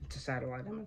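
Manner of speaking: soft voice cracking mid-line. Showing viewers a satellite image of a storm making landfall, voice cracking. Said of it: "That voice crack".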